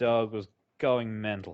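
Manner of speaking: ordinary delivery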